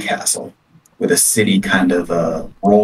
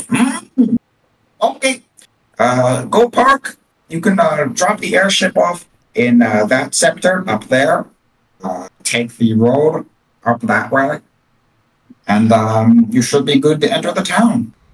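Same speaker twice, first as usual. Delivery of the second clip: small gnome voice, high and slow; 7 semitones higher than usual. Voicing a little gnome customs agent who checks the players' paper: gnome customs agent voice. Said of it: "it's like a little gnome".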